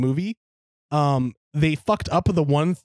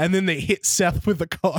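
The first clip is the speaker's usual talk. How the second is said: plain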